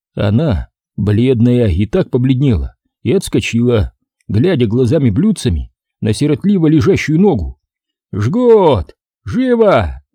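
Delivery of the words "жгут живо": high, urgent cry with first word Жгут stretched. A doctor calls to his helpers over a screaming patient: yelling. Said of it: "орал док".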